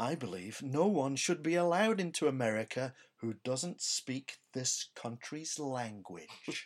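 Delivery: very deadpan, put-on delivery. Quote what a comedian said 40 odd years ago, retelling the line very deadpan. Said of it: "very deadpan".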